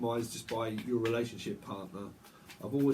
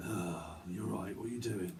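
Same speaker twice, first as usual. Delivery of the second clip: sleazy manner, low in pitch and soft. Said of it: "say things very sleazy".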